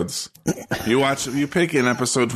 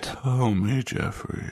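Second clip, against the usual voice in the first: put-on hushed voice, deeper and quieter; 5 dB quieter than usual. Speaker imitating how she hushed her tone, imitating a hushed, deeper tone. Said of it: "Kind of go down a couple registers".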